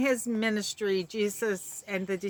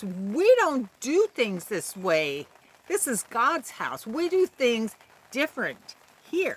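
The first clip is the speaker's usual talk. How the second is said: firm, emphatic voice, building up and rising. Retelling an outburst in God's house, acting out a very loud voice. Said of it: "I imagine in a very loud voice".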